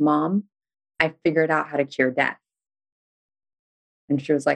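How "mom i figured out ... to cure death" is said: ordinary delivery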